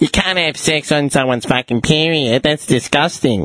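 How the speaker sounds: screeching woman's voice, loud and shrill. A speaker recalls a woman in a group discussion calling out, mock screeching. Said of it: "some fuckwit woman screeches out".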